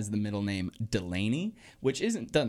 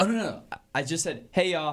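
ordinary delivery

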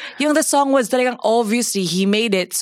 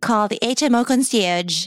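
automated phone voice, slower. Describing calling St. Luke's, in the St. Luke's robot voice. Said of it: "that's the robot voice".

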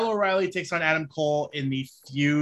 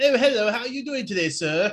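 fake British accent, higher pitch; 6 semitones higher than usual. Joking how a called-up wrestler would be used: put-on british accent. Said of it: "random British".

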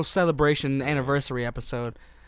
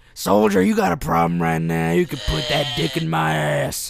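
screaming drill sergeant voice, louder; 5 dB louder than usual. Playing a drill sergeant barking at a soldier: screaming drill sergeant voice.

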